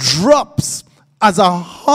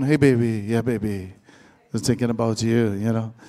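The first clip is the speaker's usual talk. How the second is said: very low, put-on, sweet-talking voice; 11 semitones lower, 8 dB quieter than usual. Acting out a man sweet-talking someone on the phone: mock sweet phone voice. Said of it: "you porn that voice".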